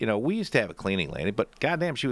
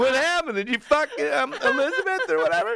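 mock teasing tone, higher and louder; 4 dB louder than usual. Retelling how a friend teased another about the kid: imitating someone taunting. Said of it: "Giving him shit".

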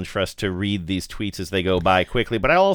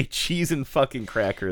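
ordinary delivery

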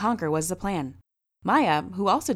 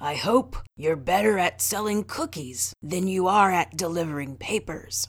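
put-on rough, rasping old man's voice. Narrating a man's line to Reggie and Henry as they sit; low, raspy voice. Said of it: "he said in a low, raspy voice".

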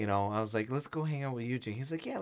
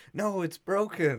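put-on pained scream, higher pitch and louder; 6 semitones higher, 4 dB louder than usual. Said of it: "he's screaming in pain".

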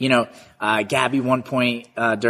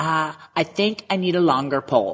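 put-on high girly voice; 4 semitones higher than usual. Retelling a pole vault practice, imitating Gabby's voice. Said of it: "my typical, uh, girl impression".

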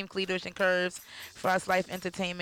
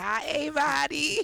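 put-on high, childlike little girl voice; 8 semitones higher than usual. Comparing another speaker's greeting to a little girl: imitating a little girl's voice. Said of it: "Don't she sound like that little girl that be like".

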